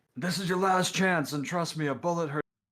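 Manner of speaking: loud, high-pitched yelling. In a role-play scene, your character yells out a threat: yelling a threat. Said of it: "I'm I'm gonna yell out".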